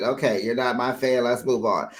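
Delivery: ordinary talk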